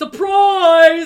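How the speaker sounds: high, very loud, over-the-top, laid-on-thick delivery. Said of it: "He's laid it on thick".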